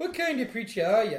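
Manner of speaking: put-on terrible Irish accent. Retelling an actor's line to mock it: imitating a terrible Irish accent. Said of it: "hearing that man go".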